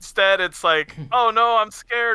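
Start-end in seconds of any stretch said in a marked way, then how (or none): 1.1-2.2 very high, drawn-out, put-on frightened panic. Mocking a game character's scene: mocking panicked voice. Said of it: "She's a panicking woman".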